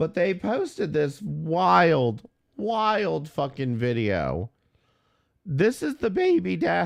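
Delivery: cracking, breaking voice, wild and drawn out. A streamer introducing a wild video to viewers, voice cracking. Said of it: "my voice is cracking".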